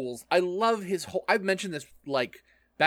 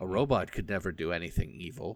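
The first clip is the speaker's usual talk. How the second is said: soothing, calming, lower and quieter; 10 semitones lower, 5 dB quieter than usual. Playing a robot talking to the others, in a soothing voice. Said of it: "Listen to my soothing voice".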